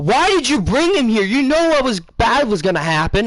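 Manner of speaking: acted-out, high-pitched, shrieking screamed outburst. Storyteller retelling how a man turned and screamed at them, imitating someone screaming.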